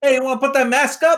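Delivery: put-on New York accent, very high-pitched. Retelling own words to someone starting trouble on the train: New York accent. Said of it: "I get the accent when".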